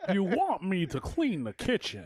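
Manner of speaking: would-be villain voice, high with swooping pitch. Showing how he plans to talk the whole time: attempted Bane voice. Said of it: "I'm gonna talk like Bane the whole time".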